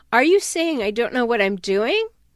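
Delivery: ordinary delivery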